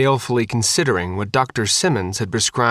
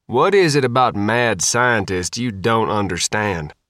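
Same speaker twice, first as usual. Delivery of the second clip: plain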